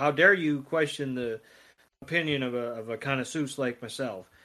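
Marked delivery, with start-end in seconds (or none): none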